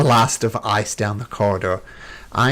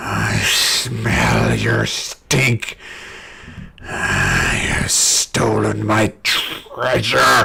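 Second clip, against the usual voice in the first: very slow, creaky, rough, swooping dragon voice. Voicing a dragon that lands and sniffs out fleeing players: dragon voice. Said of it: "you hear it go".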